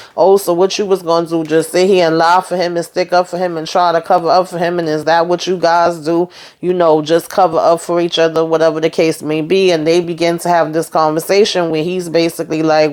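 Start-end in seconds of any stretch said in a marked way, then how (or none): none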